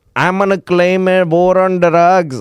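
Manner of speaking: put-on high, clumsy Filipino accent. Retelling what a president said about drugs: Duterte impression, Filipino accent. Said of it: "I can't do Filipino accent".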